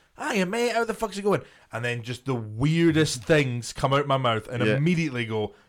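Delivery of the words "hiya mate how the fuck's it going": very high, overly chummy, dead-polite friendly tone. Retelling how an acquaintance greeted him, imitating a dead polite, friendly greeting. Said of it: "being dead polite and dead friendly going".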